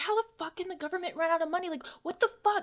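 play-acted shrill, fed-up screaming rant, very high. Retelling a girl in a parking lot complaining about the government: imitating someone yelling. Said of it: "she was yelling about".

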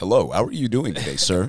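courteous, polite corporate customer-service phone voice. Showing how parents switch from cussing to corporate, imitating a polite corporate voice. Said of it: "the corporate voice that we learned growing".

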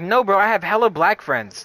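loud, defensive, insistent protest.

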